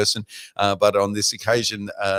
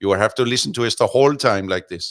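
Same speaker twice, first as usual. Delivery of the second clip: put-on Indian accent; 4 dB louder than usual. Joking about doing the English commentary: put-on Indian accent. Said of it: "we have to do this in an Indian accent".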